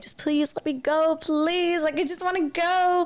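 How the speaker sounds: high, mock tearful voice broken by sobs. Retelling begging to be let go from someone's living room: imitating own sobbing. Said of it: "like sobbing".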